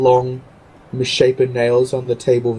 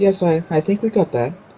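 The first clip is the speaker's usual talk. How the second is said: soft, quiet mumble, much higher pitch; 6 semitones higher than usual. Replying during a tense stare-down between two others, in a quiet mumble. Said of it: "Senny kind of just quietly mumbles".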